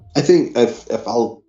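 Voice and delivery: stammering, tripping over words, repeating the start. A listener starts answering the host's call to share, stuttering. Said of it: "let me quit stuttering for a second".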